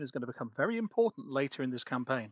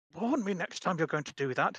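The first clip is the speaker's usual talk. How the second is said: theatrical stage whisper; 4 semitones higher than usual. A player voicing Gastus putting cards away: Gastus stage-whispering to cards. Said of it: "sort of stage whispering to the cards".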